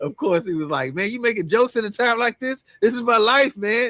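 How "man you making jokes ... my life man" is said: put-on loud, high, belligerent angry drunk voice. Retelling what a drunk driver said to him: imitating a belligerent drunk. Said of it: "the guy went belligerent on us".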